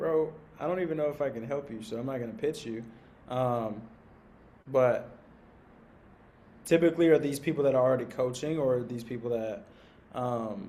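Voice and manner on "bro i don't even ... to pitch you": mock-sarcastic put-on tone. Speaker acts out how they would first reply to someone, retelling a sarcastic reply. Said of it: "first I probably would reply sarcastically".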